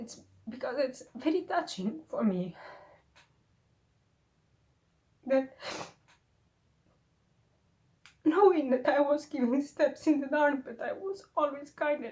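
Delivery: tearful, crying speech. A speaker reflecting on their own writing, through tears. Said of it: "And why I'm crying".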